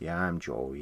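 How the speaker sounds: put-on rough, low, soft Philadelphia accent. Showing how a man's Philly accent comes back, Joey's Philly accent impression. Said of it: "it has that Philly accent come back".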